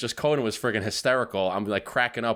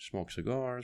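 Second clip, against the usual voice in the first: very quiet half-whisper under the breath; 10 dB quieter than usual. Retelling what a dentist said about teeth whitening, half-whispered under breath. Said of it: "like he kind of whispered it".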